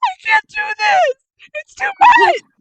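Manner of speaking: put-on crying wail, very high and very loud. Imagining a campaign with just your group, act out Haley in the corner, imitating Haley crying. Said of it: "Haley in the corner crying like".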